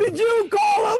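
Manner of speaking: overloud, high-pitched yelling, close into the mic. On a group call, one speaker yells a question and is told to stop: yelling. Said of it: "Stop yelling".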